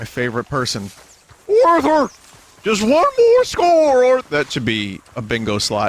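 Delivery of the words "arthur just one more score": voice cracking, swooping high and loud. Player heading to see Dutch for the next mission: bad Dutch impression, voice cracks. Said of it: "Bad Dutch impression".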